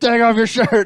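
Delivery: very high, shrill screaming. Describing Andy Elliott yelling at a man in a boardroom meeting, imitating Andy Elliott screaming. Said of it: "he's just screaming at this guy".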